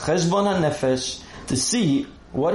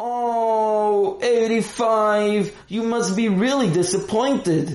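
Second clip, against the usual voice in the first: high, mocking sarcasm with fake sympathy; 5 semitones higher than usual. Narrator reads a character remarking after peeking at Aaron's test, sarcastic. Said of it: "he said sarcastically".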